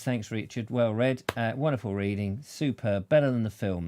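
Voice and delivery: ordinary talk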